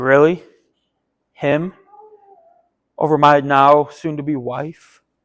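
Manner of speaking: soft, slow, cold, bitter disbelief.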